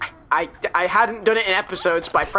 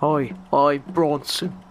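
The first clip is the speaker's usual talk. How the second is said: deep, low, deliberately bad movie-star voice; 5 semitones lower than usual. Greeting the other player in a Charles Bronson impression. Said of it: "That was my Bronson impression".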